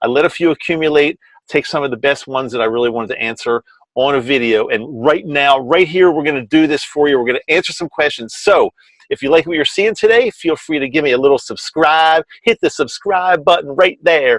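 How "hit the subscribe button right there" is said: slight put-on Southern twang. Asking viewers to subscribe in a joking way: put-on Southern accent. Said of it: "talk like a little Southern".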